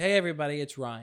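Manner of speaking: voice-of-God announcer delivery. Explaining how a performer opens a show from offstage, Ryan's voice-of-God announcement. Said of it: "He gets on the voice of God and he goes".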